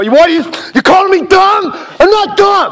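very high, worked-up, indignant, rising angry outburst. Arguing with a friend who faked video views: angry outburst. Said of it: "calm down, man".

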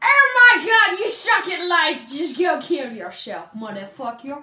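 very loud angry yelling. In an improv game, yelling at a performer who is the worst, mock-angry Simon Cowell yelling. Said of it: "pretend you're Simon Cowell and you just heard the worst performance ever".

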